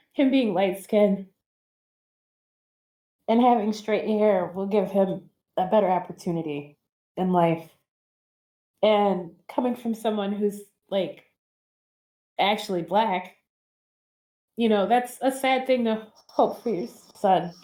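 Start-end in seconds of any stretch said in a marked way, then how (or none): 0.2-7.7 emotional, welling-up voice full of feeling. Speaker talks about their son, getting emotional. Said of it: "I'm getting emotional now".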